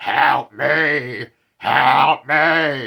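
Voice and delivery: loud, strained, possessed-sounding rasp.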